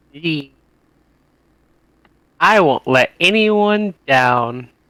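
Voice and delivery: snide, sarcastic, plainly insincere. A player answers a toast to their new captain in character, sarcastic voice. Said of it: "Sarcastic voice".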